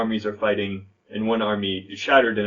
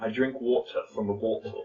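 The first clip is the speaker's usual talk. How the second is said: British accent; 6 dB quieter than usual. Repeating a sentence again for the other speaker to copy, in a british accent. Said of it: "try it with a, a British accent".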